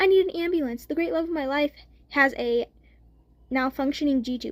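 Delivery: ordinary delivery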